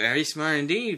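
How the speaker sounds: plain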